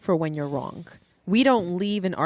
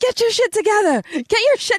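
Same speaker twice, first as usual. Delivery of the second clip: acted scream, much higher, louder; 6 dB louder than usual. Recounting what she screamed at him while he was drunk, retelling a scream. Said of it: "she's screaming at me".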